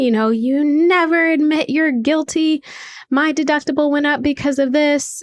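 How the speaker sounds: put-on high, furious screaming dad voice. Retelling their dad's phone call after an insurance claim, imitating a screaming dad. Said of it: "my dad called me screaming".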